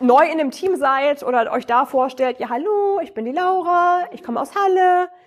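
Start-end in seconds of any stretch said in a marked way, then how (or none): 2.4-5.1 question-like rising pitch on hallo and the following words. Introducing yourself to a new team as if asking questions: rising at each phrase end. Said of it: "Ist es so oder stellst du gerade Fragen? ... dieses nach oben gehen mit der Stimme".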